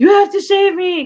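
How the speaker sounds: very high, shrill screaming. Retelling a panicked call to the assistant manager: imitating someone screaming. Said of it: "called my assistant manager screaming".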